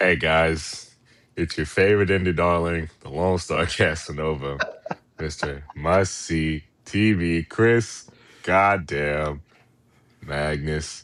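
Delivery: very low, gloomy, downcast, mopey drone. Podcast co-host introduces themself after being handed the mic; gloomy, mopey delivery. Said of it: "You sound like Eeyore".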